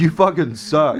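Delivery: light, playful, joking teasing voice. Retelling how Steven called out while leaving the show: imitating Steven's loud yell. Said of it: "loudly when he went".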